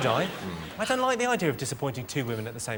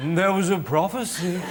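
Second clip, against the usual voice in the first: slow, put-on old man character voice; 3 semitones higher, 4 dB louder than usual. Saying a prophecy line the way it should be said, put-on blind old man voice. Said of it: "Like you're a blind old man".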